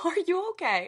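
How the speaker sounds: put-on laughter, concerned tone. Retelling the reply to someone's dark joke: imitating laughing while talking. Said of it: "saying it while I'm laughing".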